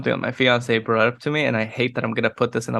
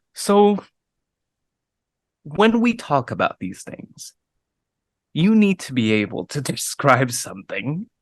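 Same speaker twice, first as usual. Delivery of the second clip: swooping delivery broken up by dramatic pauses; 2 semitones higher than usual. Showing own habit in speech, dramatic pauses between phrases. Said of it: "putting little dramatic like dramatic pauses in my speech. And so I'll just be like".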